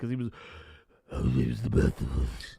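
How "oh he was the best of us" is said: mumbled, very low, gruff, growling voice. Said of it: "didn't even understand what the fuck Batman was saying".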